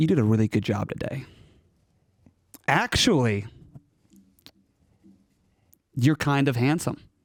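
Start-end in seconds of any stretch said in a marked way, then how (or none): 2.7-3.5 strong emphasis on the start of actually. Demonstrating how a compliment sounds when emphasized, stress on ACTUALLY. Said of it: "I want to emphasize actually".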